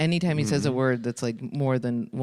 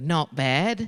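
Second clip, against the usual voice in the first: put-on Australian accent; 2 semitones higher than usual. Retelling what an australian audience member said to every question: imitating an australian accent. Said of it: "who's Australian, and every question I asked him, he'd go".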